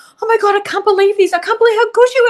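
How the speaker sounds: overcome, sobbing, high, rushed tearful voice. Retelling how a man reacted to how good she was, imitating him crying. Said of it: "And he's just crying".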